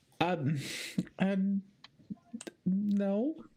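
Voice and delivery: timid, bashful tone. Voicing a character asked a teasing question: shy. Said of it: "very shyly says no".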